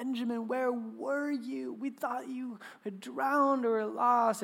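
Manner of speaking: mock weeping, tearful voice. Retelling how the dad, thinking he had drowned, ran to him, imitating dad weeping. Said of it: "My dad just weeping".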